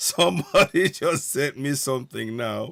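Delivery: talking through laughter. Reacting to something someone just sent: laughing while talking. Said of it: "and I'm laughing".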